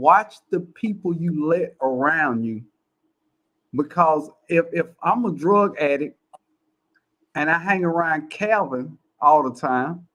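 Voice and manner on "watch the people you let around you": very slow, deliberate delivery, weighing each word. Repeating a point to listeners for emphasis, said really slowly. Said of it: "I'm gonna say that really slow".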